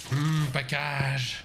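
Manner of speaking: slow, drawn-out snake-person voice. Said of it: "Why do you sound like a snake person".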